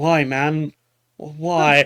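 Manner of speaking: made-up monkey voice, mandrill-like. Voicing a mandrill looking at a player: put-on mandrill voice. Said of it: "one of them looks at you and goes".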